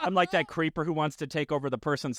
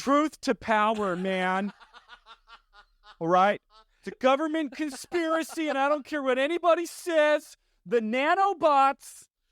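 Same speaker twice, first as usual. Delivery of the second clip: put-on very high, very slow, dragged-out stoner hippie voice; 10 semitones higher, 3 dB louder than usual. Joking about a government conspiracy: hippie voice. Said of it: "that's a good burr".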